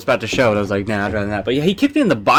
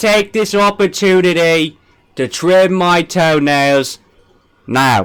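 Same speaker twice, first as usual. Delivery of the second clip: poorly imitated British accent; 6 semitones higher, 4 dB louder than usual. Trying out a voice in front of the others, do a botched JFK impression. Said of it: "I tried to do J F K".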